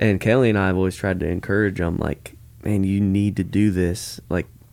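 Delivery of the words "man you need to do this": usual speaking voice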